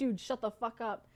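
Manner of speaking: normal talking voice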